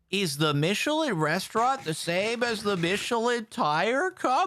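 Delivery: very high-pitched, slow, teasing, facetious delivery. Answering another player about Michelin ratings: facetious mock question. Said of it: "Why did you say it like that?".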